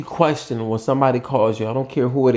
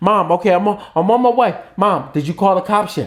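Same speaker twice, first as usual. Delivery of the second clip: urgent, pitched-up calling voice; 7 semitones higher than usual. Showing how to call Mom while she's screaming, like rushing to the rescue. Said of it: "say it in a way that's like you're on your way".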